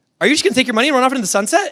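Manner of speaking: rushed high voice. Retelling a sales call reviewed with Ben, quoting her saying it so fast. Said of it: "she said it so fast".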